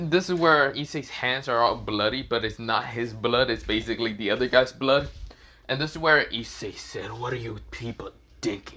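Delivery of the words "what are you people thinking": soft, cold, icy, sinister, menacing voice. Retelling a story scene, voicing Issei's line to the group: Issei's cold, sinister voice. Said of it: "he said in such a cold, sinister voice".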